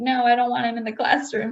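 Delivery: weepy, tearful, crying voice. Retelling what a crying student said at the beginning: imitating someone crying. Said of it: "one of them was crying".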